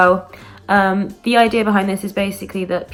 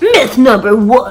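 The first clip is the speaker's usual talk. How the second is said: loud, over-the-top, dramatic fake American accent; 2 semitones higher, 7 dB louder than usual. Announcing the first myth in a put-on voice: dramatic put-on american accent. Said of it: "I wasn't expecting myself to go so dramatic with it there".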